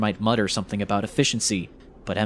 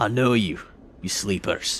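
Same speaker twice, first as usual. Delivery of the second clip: low pirate voice, kept clear; 2 semitones lower than usual. Storyteller voicing Nemphis as he cooks: deep but clear pirate voice. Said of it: "his voice deep but clear".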